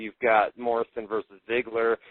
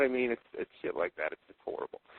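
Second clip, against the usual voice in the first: usual speaking voice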